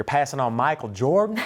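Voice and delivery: put-on Southern accent. Retelling what a coach said, imitating a southern accent. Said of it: "You have a better Southern accent".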